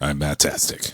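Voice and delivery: flat, unexcited monotone with zero enthusiasm. Introducing himself on a podcast: flat, unexcited. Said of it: "could you sound any more excited?".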